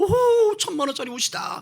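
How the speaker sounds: loud, high, delighted gloating whoop.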